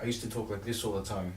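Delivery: quiet, unclear words mumbled and blurred together. Recalling how she used to talk growing up, mumbled. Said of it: "I used to just like mumble constantly".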